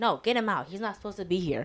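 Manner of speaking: acted-out angry shouts. Retelling how people yelled at an old man to leave; imitating people yelling. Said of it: "they're over here yelling at him like".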